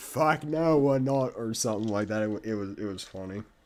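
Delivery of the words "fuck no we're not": put-on broad Australian accent, laid on thick, drawn out. Retelling an Australian historian's reaction while reviewing it, in a thick Aussie accent. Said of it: "he just says in this thick Aussie accent".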